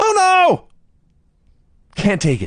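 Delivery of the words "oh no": mock, very high, shrill, loud shriek of dismay. Retelling a wrestling match, quoting the commentator: imitating David Crockett screaming. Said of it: "David Crockett screams".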